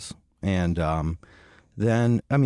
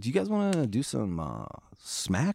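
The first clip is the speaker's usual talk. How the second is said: arch, sly, sarcastic, soft, swooping and drawn out; 5 semitones higher, 5 dB quieter than usual. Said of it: "He said, like, cleverly".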